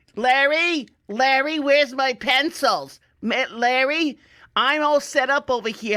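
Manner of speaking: put-on old lady voices hollering, slow screaming, name drawn out. Retelling old ladies calling across a room to each other, imitating old ladies screaming. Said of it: "every old lady in there was screaming".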